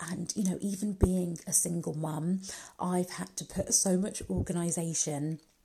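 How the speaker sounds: whispered voice.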